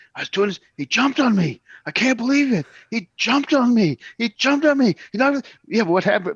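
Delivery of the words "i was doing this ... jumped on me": mock agitated, losing-it, swooping, worked-up yell. Act out Vern losing it whenever he retold being jumped on, imitating Vern yelling. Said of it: "couldn't go past that without losing it and start yelling".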